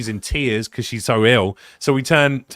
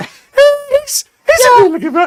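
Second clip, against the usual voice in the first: mock high-pitched voice, higher and louder; 8 dB louder than usual. Imitating the other speaker praising a guy: imitating someone in a high voice. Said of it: "in such a high voice".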